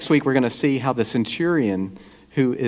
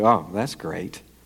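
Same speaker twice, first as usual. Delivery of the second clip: put-on sarcasm, much lower; 6 semitones lower than usual. Illustrating what people say about things in their lives, acting out a sarcastic remark. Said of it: "sarcastically say".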